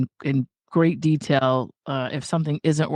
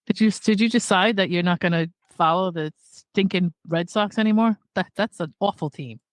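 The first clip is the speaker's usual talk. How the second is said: upset, worked-up complaining tone, pitched up; 5 semitones higher than usual. Role playing a dysregulated family member complaining about a team: acting as an upset family member. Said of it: "role play a dysregulated family member".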